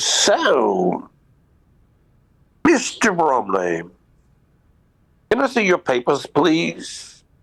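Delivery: put-on strong English accent. Retelling what a man said to him, imitating a hard English accent. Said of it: "very hard, you know, English accent".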